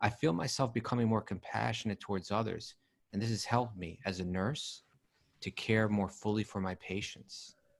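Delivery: ordinary talk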